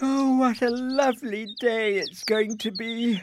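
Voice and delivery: high, drawn-out words stretched through a yawn. Narrator reading a character speaking through a yawn. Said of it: "yawned Isabel".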